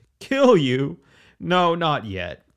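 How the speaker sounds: amused laughing, very slow and high. Narrator reading King Davin answering a man who asks why he wasn't killed, laughing. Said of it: "King Davin laughed".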